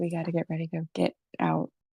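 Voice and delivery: very quiet, hushed, under-the-breath murmur. Grabbing Harbo's wrist, the character speaks very quietly under their breath. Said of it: "I say it very quietly under my breath".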